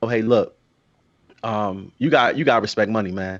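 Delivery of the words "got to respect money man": ordinary talk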